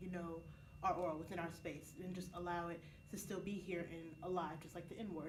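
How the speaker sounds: normal talking voice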